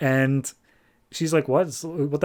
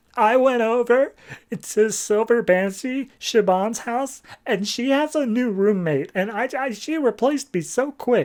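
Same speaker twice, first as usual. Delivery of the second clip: put-on, very high, slow, weepy, tearful sobbing; 9 semitones higher than usual. Retelling a story scene where Supergirl breaks down crying: retelling a tearful breakdown. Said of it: "Supergirl just starts breaking down crying".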